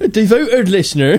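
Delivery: Somerset-style West Country accent. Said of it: "Is he from the West Country?".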